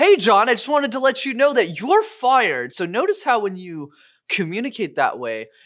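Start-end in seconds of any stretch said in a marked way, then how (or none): 0.0-2.7 super enthusiastic, bright, loud, upbeat tone. Delivering bad news in a way that sounds off-putting: positive, enthusiastic. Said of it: "super enthusiastic ... you sound really off putting".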